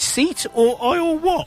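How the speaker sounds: put-on posh accent, very high and drawn-out. Retelling a sketch where a man on a plane answers a woman, posh voice. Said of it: "he does it in a posh voice".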